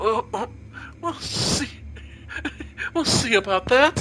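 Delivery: rough laugh through words. Narrator voicing a young man's reply to a demoness: coarse laughing voice. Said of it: "A coarse laugh escapes the young man's throat".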